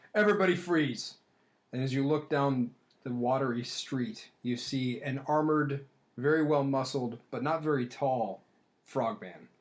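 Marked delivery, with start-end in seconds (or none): 0.1-1.1 booming, high, loud, croaking frog-like yell. As game master, voice someone down the street yelling an order, loud croaking yell. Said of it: "another even louder croaking voice yell".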